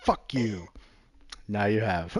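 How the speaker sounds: slow, deliberate pause before now you have. Retelling how he delivered a line with perfect timing: pause before now you have. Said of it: "he actually put the pause".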